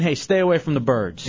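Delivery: ordinary delivery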